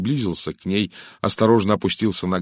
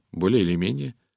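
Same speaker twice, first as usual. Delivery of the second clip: plain reading voice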